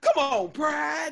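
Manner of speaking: high-pitched, loud calling-out voice. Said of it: "she was like".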